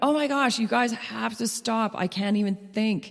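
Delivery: acted high, frantic, frazzled, panicked outburst. Recounting the search for a lost stuffed toy, retelling own panicked outburst. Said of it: "their panic and my panic".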